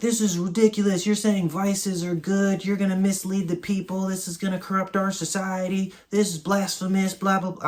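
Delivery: put-on, very high-pitched Southern accent. Retelling Englishmen objecting to a poem about vices, in a put-on Southern accent. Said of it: "I don't know why I have a Southern voice".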